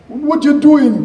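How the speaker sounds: very high, loud, slow cartoonish Jamaican accent. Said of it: "it's a cartoonish Jamaican accent".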